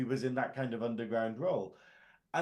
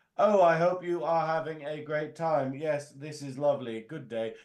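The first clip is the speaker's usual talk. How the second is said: terribly deliberate, stagey, loud, stilted bad acting; 3 semitones higher, 6 dB louder than usual. Showing what Vulcan acting is not: imitating terrible deliberate acting. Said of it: "terrible, deliberate acting".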